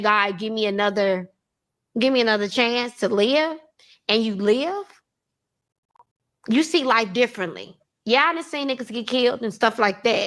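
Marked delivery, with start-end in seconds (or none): none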